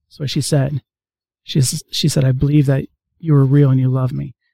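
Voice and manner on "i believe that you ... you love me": whispered words. Retelling a girl's prayer, quoting the words she spoke: retelling a whisper. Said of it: "She whispered that".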